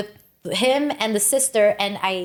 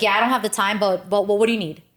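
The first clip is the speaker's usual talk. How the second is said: mock New York-style delivery. Retelling a Jersey server's rough way of talking: imitating a very New Yorker server. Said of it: "Very New Yorker".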